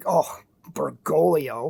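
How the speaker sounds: dripping sarcasm, contemptuous and disdainful. Imitating those with no respect for him: mock dripping sarcasm and disdain. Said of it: "with a dripping sarcasm and disdain".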